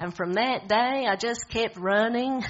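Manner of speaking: put-on gruff American accent. Retelling a film scene, the speaker quotes Forrest Gump's line in a bad American accent. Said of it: "Sorry if it's a really bad American accent".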